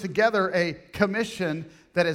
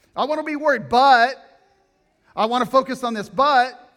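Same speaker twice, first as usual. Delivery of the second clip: sudden loud shout, pitched up; 5 semitones higher, 7 dB louder than usual. Explaining Matthew 6:33 to a listener, yelling. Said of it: "sorry, I'm yelling".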